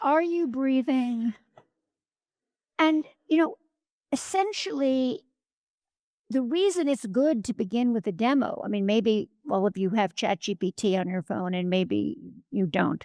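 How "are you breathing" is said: warm, close, intimate male voice. Imitating a phone chatbot answering a request for tips: warm male Ryan Gosling voice. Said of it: "sort of Ryan Gosling voice says".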